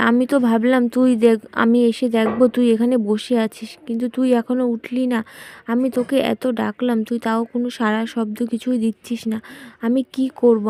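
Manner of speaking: ordinary talk, nothing marked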